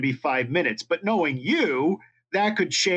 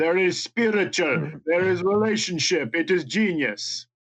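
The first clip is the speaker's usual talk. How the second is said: put-on accidental slip into a Russian accent. Imitate a maker of art splatter pieces talking, in an accidental Russian accent. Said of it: "You just made him Russian".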